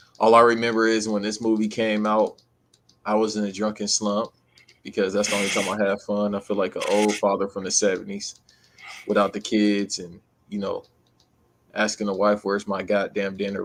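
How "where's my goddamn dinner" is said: ordinary delivery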